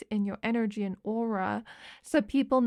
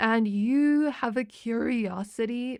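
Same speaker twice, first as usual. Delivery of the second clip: slow, cracking, breaking voice. Telling someone how they come across to others, voice cracking. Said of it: "I don't know why my voice is cracking there".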